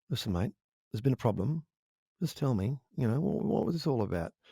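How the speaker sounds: very quiet, calm, reasonable, level-headed murmur. Retelling how Carl Williams would call about a problem: imitating him speaking very quietly. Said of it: "he'd call you up and very quietly say".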